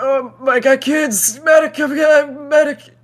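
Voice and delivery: mock very high, frantic, panicked screaming. Recounting a guy shot next to them in a game: retelling panicked screaming for a medic. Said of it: "He just starts screaming like".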